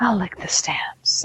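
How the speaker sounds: put-on sultry voice. Retelling a hotel scene, the speaker quotes Anne Heche's line, mock-sultry. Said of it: "all sultry about it".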